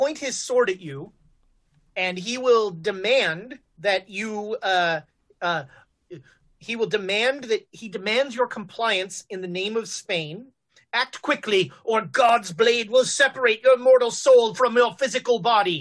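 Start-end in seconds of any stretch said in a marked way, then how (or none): 10.9-15.8 furious ranting, louder. Voicing an old captain who threatens a player with a sword: raving violently. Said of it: "So he starts raving at, at Jonesy".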